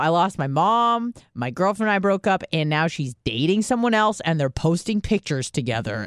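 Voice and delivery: plain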